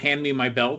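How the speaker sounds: ordinary talk, nothing marked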